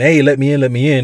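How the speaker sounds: play-acted, full-on, loud screaming. Retelling a film scene at a blocked train door: imitating someone screaming. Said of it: "he's screaming".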